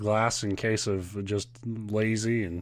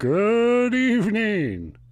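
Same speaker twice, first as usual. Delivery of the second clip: put-on announcer voice, much higher, louder; 12 semitones higher, 8 dB louder than usual. Greeting listeners while aiming for prime time radio; radio announcer voice. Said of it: "that's my radio voice".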